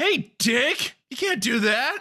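shrill, squealing, very high in-character yell. Yelling in character at a helicopter sniper who shot the game away: in-character yelling. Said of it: "I'm yelling at him".

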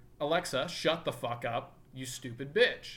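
ordinary talk

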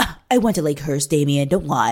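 mock huffy, indignant, all puffed up. Retelling a show scene where Mia confronts Damian: imitating huffy Mia. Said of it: "gets all, like, huffy and puffy".

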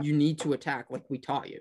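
plain

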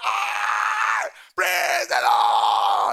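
very high, very slow, loud, swooping jubilant shout. Retelling a shout of joy at good news: imitating a joyful shout. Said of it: "I shouted".

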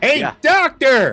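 shouting. In a role-play game, a player calls to the doctor two feet away, shouting. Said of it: "You don't have to shout".

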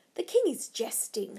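ordinary talk

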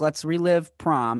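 ordinary delivery

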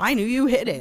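high, loud, snarky tone.

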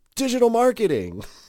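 put-on very high, loud yell. A speaker recounts shouting an answer into a man's ear, retelling a shout. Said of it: "shouted in his ear".

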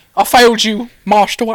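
put-on loud, high, belted Cockney accent butler voice. Discussing a Cockney accent, speaker does a Michael Caine Cockney impression. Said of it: "Kind of like Michael Caine is Cockney".

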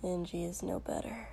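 muttered, barely audible, very quiet. A narrator reads one character's reply to another, muttered. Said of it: "Shoto muttered".

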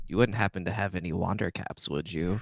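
self-satisfied tone. Playing a character asking the wood elf for more: smug. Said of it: "side-eye smug".

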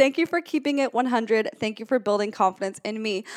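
ordinary delivery

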